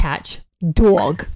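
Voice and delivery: put-on New Jersey accent. A speaker repeats a word for the others, in a new jersey accent. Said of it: "Let me say it in New Jersey".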